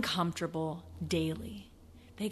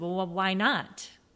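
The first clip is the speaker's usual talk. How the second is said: put-on Australian accent, much slower. Retelling a man's answer about his travels, the speaker does his australian accent. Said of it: "In his Aussie accent".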